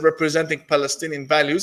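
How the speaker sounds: normal talking voice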